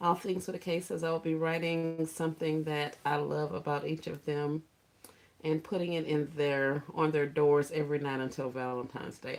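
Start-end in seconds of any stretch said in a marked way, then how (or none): none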